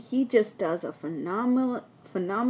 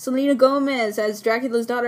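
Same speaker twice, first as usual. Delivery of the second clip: ordinary talk, nothing marked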